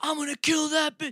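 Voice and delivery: mock screaming at full volume, very high, shrill and rushed. Retelling what a man screamed as he walked away: retelling a scream. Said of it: "He's screaming".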